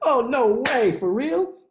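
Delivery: very high, too-loud, excited outburst. Hearing he spent high school obsessing over a girl, someone reacts: loud. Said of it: "Why don't you lower your voice?".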